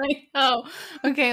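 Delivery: speech broken up by laughs throughout. Trying to answer while still laughing at a joke: laughing while talking. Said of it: "let me stop laughing and I can talk".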